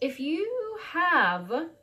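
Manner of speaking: voice breaking and cracking mid-line. Giving a tarot reading to Sagittarius viewers, voice cracking. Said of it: "sorry for the crack in my voice".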